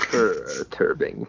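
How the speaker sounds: sultry, low, slow purr on "perturbing".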